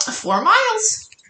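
tiny bird-like voice, very high. Retelling what he said on zooming back, in a little bird voice. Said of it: "he says in his little bird voice".

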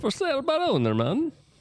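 fake Jamaican accent, very high-pitched. Joking with others over a misheard phrase after a quiz: fake Jamaican accent. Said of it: "That's Jamaican".

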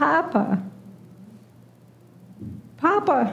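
put-on high, laughing little girl voice, calling out. Recalling hearing a granddaughter calling for her dad, imitating a little girl voice. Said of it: "I heard her little girl voice".

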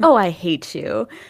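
sweet, cute, endearing, drawn-out voice. Retelling a film blooper where the line is said sweetly: imitating Hayden's cute endearing voice. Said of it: "in, like, a cute and endearing voice".

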